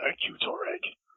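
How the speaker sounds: whispered speech. Voicing a character rubbing his head and thanking toreg: whispering.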